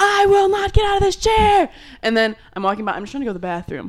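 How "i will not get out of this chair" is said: mock, very high, raised tantrum screaming. Retelling a man refusing to get out of his chair, imitating someone screaming. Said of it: "And he's screaming".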